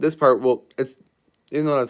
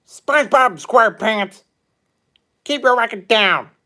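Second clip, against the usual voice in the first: very high, loud, raised squeaky voice; 10 semitones higher, 7 dB louder than usual. Doing SpongeBob characters requested from chat: Squidward voice. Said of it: "pretty much an okay impression of Squidward".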